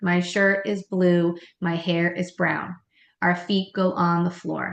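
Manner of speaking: calm, steady, even, level tone. Demonstrating how to state an expectation, in an even tone. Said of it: "So it's that even tone".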